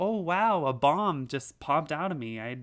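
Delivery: mock sarcastic, fake innocent tone. Retelling what they said after secretly hacking items in races: retelling a sarcastic remark. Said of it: "sarcastically say".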